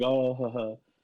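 imitated laughing. Retelling how a man in an acting class reacted: imitating someone laughing. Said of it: "like, laughing".

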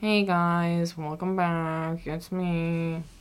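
mock, very slow, mopey, gloomy, drawn-out delivery. Imitating a friend's gloomy greeting: imitating Michael's Debbie Downer voice. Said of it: "I sound really Debbie Downer".

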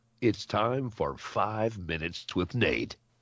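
radio announcer voice. Announcing the title of the segment: announcer voice. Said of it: "the announcer voice".

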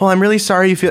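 put-on gloating voice. Retelling a gym caller reading back a survey: imitating a gloating caller. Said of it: "she's having a field day".

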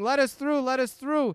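high, loud, frantic desperate pleading. A storyteller voices stormtroopers running at the players; pleading.

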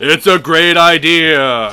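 deep heavenly voice, stretched out. Speaker voices God replying to Gary, deep God voice. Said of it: "God's voice is deeper than I imagined".

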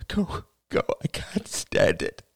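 slow, drawn-out, rasping, hoarse whisper. Narrator reads Ethel speaking to her daughter; hoarse whisper. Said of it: "she whispered hoarsely".

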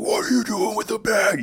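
high, loud drill instructor style yell.

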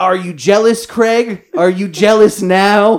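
shrill, loud screaming woman's voice. Retelling a car story, speaker quotes a woman screaming at craig; retelling a scream. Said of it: "while screaming".

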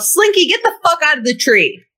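sharp, high, hollered yell. Calling to someone in a tree as thunder cracks closer: yelling. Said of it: "and I just yell".

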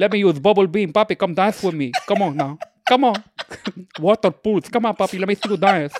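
duck character voice speaking English words. Speaker shows how the duck would sound speaking english, duck talking in english. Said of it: "He would talk like this".

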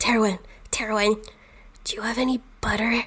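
fast, hushed whisper, dropping downward. Voicing a character who sneaks up a ladder, whispering. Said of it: "he whispers down to Terwin and says".

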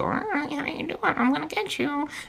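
very high, toned-down, half cartoon duck voice. Describing the voice Scott calls people in, a speaker imitates it: half Donald Duck voice. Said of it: "It's not full Donald Duck".

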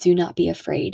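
normal talking voice

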